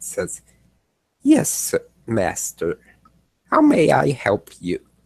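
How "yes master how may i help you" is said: AI assistant voice, sing-song with swooping pitch. A game master voices a summoned AI assistant answering its master; Gideon AI specter voice. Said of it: "I am an artificial intelligence. / and then this small bluish gray face appears above it. / I am a personal assistant specter specializing in communication and navigation".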